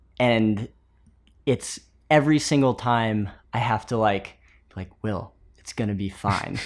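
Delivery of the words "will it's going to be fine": mean, low, hushed voice. Acting out the voice in one's head giving reassurance: mean low Bruce Lee voice. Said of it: "a really mean Bruce Lee with a low voice".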